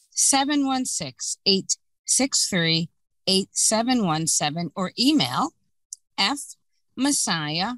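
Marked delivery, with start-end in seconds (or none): 0.2-4.7 slightly slower pace. Repeating a phone number for the audience, a little slower. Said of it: "I'll say it a little slower".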